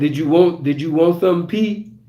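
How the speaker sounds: put-on speaking with a New Orleans accent. Retelling what a man at the bar asked: imitating a New Orleans accent. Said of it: "with that New Orleans accent".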